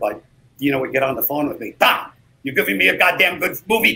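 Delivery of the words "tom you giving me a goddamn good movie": loud, high-pitched voice. Retelling phone calls during an over-schedule shoot: Dino impersonation. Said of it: "your Dino impersonation".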